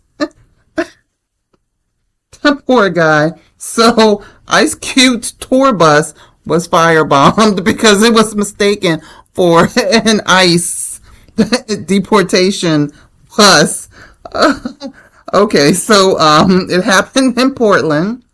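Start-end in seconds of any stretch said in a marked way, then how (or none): 3.6-13.9 high, giggling, laughing through the words. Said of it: "Let me get it together".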